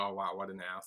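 muttering. Retelling how a man answered after refusing a request, mumbling. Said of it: "he kind of like mumbles".

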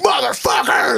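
very high, shrill, all-out acted screaming yell. Retelling how Gooch reacted to someone drinking his beer: imitating Gooch screaming. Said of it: "you just hear him scream".

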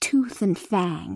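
ordinary delivery, nothing marked

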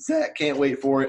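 voice cracking and breaking on the words. Podcast host announcing this week's episodes, voice cracking. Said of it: "That was a voice crack".

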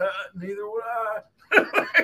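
very high pitch, slow and swooping. Imagining Bill's reply, doing a horrible Bill Clinton impression. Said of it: "That was a horrible impression".

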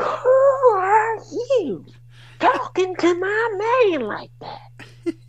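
very high-pitched, shrill, loud screaming screech. Retelling a wrestling promo where a woman cuts in, Brandi Rhodes loud screech. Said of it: "comes this loud screeching voice".

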